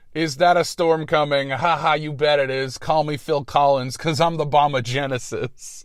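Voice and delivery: ordinary talk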